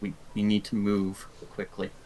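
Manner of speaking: muttered under breath. Playing a character hurrying a family away: muttered under her breath. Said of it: "utters under her breath".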